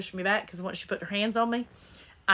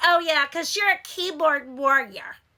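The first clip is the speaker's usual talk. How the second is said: mimicked mousy annoying voice, higher and louder; 7 semitones higher, 5 dB louder than usual. Retelling a laundry-room argument, imitating a mousy annoying voice. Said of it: "she had this really mousy, like, annoying voice".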